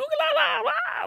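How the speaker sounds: really high-pitched, stretched-out, taunting call. Retelling how a friend yelled at a man with a shovel; really high-pitched voice. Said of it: "just like in a really high-pitched voice".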